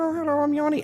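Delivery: cute, very high-pitched, tiny doll-like voice.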